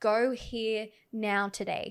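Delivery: put-on urgent, insistent screaming, very slow and drawn-out. Retelling a moment that felt like someone screaming: imitating someone screaming. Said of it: "someone was screaming at me".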